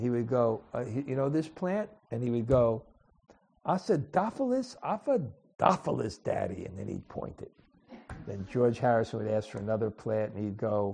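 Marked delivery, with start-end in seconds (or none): 3.7-6.7 put-on New York accent, animated, high and swooping. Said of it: "in his New York accent".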